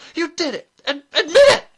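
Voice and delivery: very high, very loud, shrill gull-like shriek. Narrator reads one woman accusing another in front of others, shrill. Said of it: "Mrs. Earwig's voice was as shrill as a gull".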